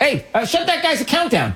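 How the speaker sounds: high-pitched, mock bossy, mocking voice.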